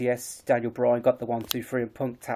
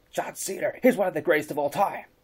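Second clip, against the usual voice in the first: cheesy announcer voice, higher pitch; 5 semitones higher than usual. Retelling what the commentator said about Cena: bad Michael Cole impression. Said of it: "a really bad Michael Cole impression".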